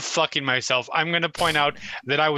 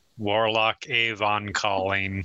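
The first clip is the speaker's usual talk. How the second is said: deadpan flat delivery; 7 semitones lower than usual. A player voicing their character announcing himself in a game: flat, deadpan tone. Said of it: "In a flat, deadpan tone".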